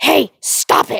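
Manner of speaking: mock irritated, rough, fed-up, annoyed tone. Retelling a phone call, imitating Evan getting mad. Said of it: "he just starts getting so freaking mad".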